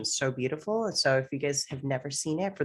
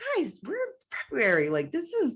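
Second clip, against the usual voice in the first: high-pitched, exasperated voice. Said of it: "I'm like".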